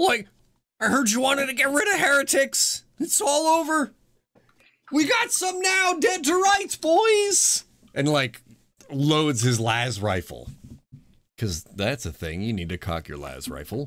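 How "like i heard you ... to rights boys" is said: very high-pitched cartoon character voice. Role-playing a guardsman turning while hustling toward the stairs, in a Shaggy voice. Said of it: "I'm sticking to the Shaggy here".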